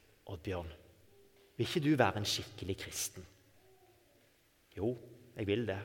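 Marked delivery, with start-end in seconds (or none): 0.3-3.3 tiny, small little devil voice. Retelling his inner struggle, the speaker voices the devil in a small voice. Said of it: "også med på en liten sånn stemme".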